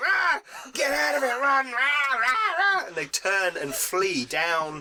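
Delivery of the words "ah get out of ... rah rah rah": very high, shrill, shrieking goblin screams. Voicing a mob of goblins turning to flee: goblins screaming.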